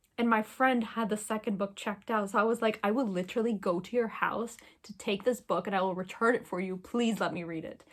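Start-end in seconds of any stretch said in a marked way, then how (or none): none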